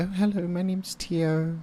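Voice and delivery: very soft, hushed, very high-pitched voice. Recalling how Tio sounds after a while, imitating Tio's soft voice. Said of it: "she speaks so soft".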